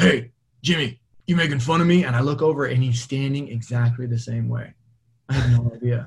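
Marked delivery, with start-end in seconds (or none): 0.0-2.0 put-on loud, raspy, aged voice calling out. Retelling being caught in the same pose at school, imitating Mr. Gabriel's old raspy voice. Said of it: "I hear this like old raspy voice".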